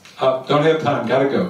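ordinary delivery

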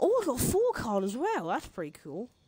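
cheerful sing-song delight. Playing a card game for his life and drawing a good card, sounding happy. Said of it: "Why do I sound so happy".

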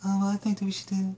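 put-on quiet talker voice. Mimicking his partner answering about dinner, imitating a low talker. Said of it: "You're a very low talker".

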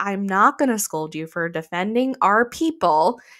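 ordinary delivery

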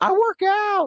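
squeaky cracked voice break, very high pitch. Discussing shirtless radio, a host answers the other host, voice cracking. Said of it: "why did your voice crack as you said that?".

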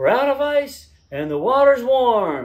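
very high, very loud, shrill shouting. A runner retells what a lady shouted at an aid station, imitating a woman yelling. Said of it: "a lady yelling at the aid station who's just yelling".

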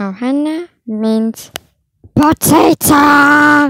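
loud, belted cartoon alien creature voice. A speaker tries a second take of Stitch, in a Stitch voice. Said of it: "Take two of Stitch".

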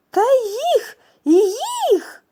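very high, very loud joyful cry. The water sprite answers his laughing wife, exclaiming joyfully. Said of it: "радісно вигукнув водяник".

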